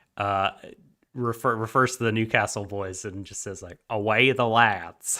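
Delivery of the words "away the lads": put-on Southern American accent, as raised in Atlanta. Retelling a clip of Jimmy Carter addressing a football team: Jimmy Carter southern accent. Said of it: "him in a southern accent saying".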